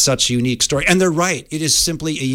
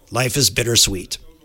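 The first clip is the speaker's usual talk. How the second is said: rough, grainy, gravelly voice. Retelling what a man said to him, in a gravelly voice. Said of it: "I say it in his gravelly voice".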